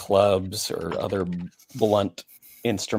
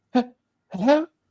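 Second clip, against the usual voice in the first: put-on strangely warped, very high-pitched young woman's voice. Voicing a young woman speaking through a distorted intercom: distorted young woman's voice. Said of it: "strangely distorted, a woman's voice sounds very young".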